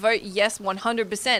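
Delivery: ordinary talk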